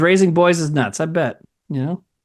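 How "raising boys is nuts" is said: ordinary delivery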